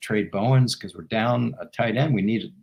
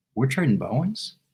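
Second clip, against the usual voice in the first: meek, sheepish, small voice; 3 semitones higher than usual. Retelling how a man at a desk answered: imitating a sheepish question. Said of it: "very sheepishly".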